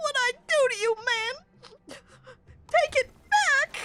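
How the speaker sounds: very high, tearful crying voice, fighting back tears. Narrating a scene where Pope has been hurt by the listener: Pope holding back tears. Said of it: "fighting to keep away the tears".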